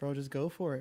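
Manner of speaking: ordinary delivery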